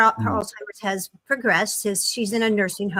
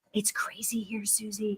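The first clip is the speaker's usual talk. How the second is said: mock whisper, quieter; 13 dB quieter than usual. Retelling what a care aide quietly said: imitating someone whispering. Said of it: "the C N A is kind of whispering".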